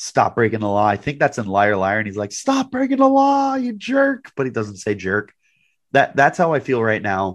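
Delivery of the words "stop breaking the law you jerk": mock very high-pitched, screamed scolding. Comparing feelings about a team's penalties to a movie scene, imitating Jim Carrey screaming. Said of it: "screaming into the phone".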